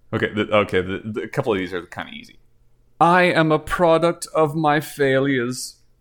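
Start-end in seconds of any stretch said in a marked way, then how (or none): 3.0-5.7 slow, drawn-out, deliberate, each word weighted. Reading a quote for others to guess who said it: Werner Herzog voice. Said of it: "you do them all in the Herzog voice".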